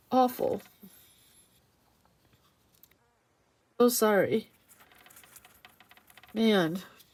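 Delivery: slow, tearful speech, crying through the words. Talking about a husband's risky neck surgery: crying while talking. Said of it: "Now I'm crying".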